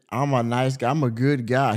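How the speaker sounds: ordinary delivery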